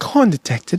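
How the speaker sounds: put-on sexy, seductive, sultry British accent. Trying out a voice line for a gag video, in a sexy British voice. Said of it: "It has to be like some sexy British voice too".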